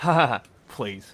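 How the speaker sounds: dainty, slow little ha-ha chuckle. Retelling the reporter's question being laughed off: imitating a little chuckle. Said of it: "the little chuckle is just perfect".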